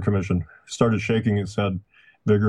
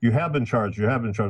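put-on very angry, accusing yell; 3 semitones higher than usual. Retelling how a reporter yelled at Oswald: imitating an angry yell. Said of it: "some reporter yelled out".

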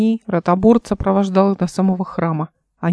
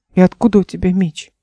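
plain reading voice

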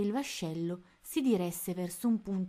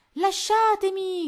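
very loud, shrill, high-pitched yell; 13 semitones higher, 9 dB louder than usual. Reading Tony, surrounded by pirates, shouting. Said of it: "gridò".

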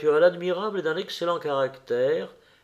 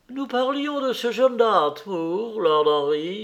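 bright, cheerful, high-pitched crying out; 6 semitones higher than usual. The duchess waves across the table to a man: crying out gaily. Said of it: "s'écria la duchesse, lui faisant gaiement des signes".

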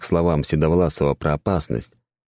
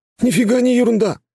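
very high, annoyed, displeased cry; 4 dB louder than usual. A skinny young guy objects to the gray-haired man: displeased cry. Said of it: "недовольно вскрикнул тощий парнишка".

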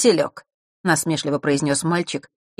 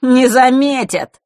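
high, loud, teasing, dismissive mocking tone; 8 semitones higher, 6 dB louder than usual. Fesh answers Vasilisa, who fears they'll be noticed, mockingly. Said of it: "насмешливо произнес Фэш".

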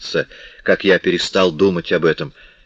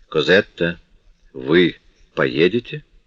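cold, distant, chilly reserve. Marius stands up and asks Cosette, coldly. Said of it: "холодно спросил".

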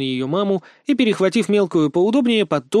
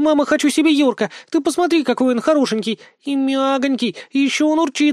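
shrieking with delight, very high-pitched squeal; 9 semitones higher than usual. A girl clutching a small animal begs her mother to keep it, excited squealing. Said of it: "заверещала она".

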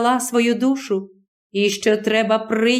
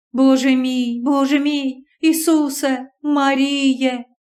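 very slow, quavering, trembling mutter; 2 semitones higher than usual. Reading aloud, a terrified young nun turns to the wall: trembling mutter. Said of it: "бурмотіла тремтячим голосом".

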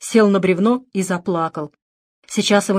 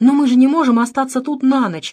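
high, scared, alarmed outcry; 5 semitones higher than usual. Told by a companion to stay the night, he exclaims in fright. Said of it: "испуганно воскликнул Дэвид".

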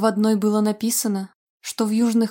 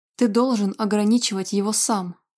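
plain

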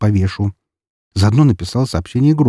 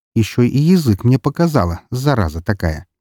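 plain reading voice

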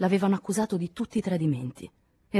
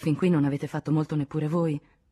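plain

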